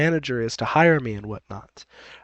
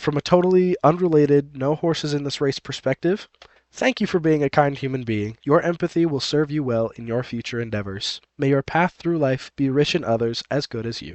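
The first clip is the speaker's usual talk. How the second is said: usual speaking voice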